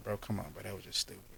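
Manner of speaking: soft, calm voice without any yelling. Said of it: "I don't do a lot of, uh, yelling".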